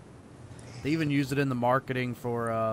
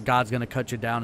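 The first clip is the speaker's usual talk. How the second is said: usual speaking voice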